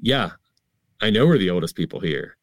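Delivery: normal talking voice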